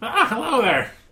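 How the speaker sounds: cackling character voice. A voice greets a player who is in the bath: cackling voice. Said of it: "you hear a cackling voice".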